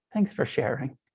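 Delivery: slightly sarcastic. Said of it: "with a little sarcasm".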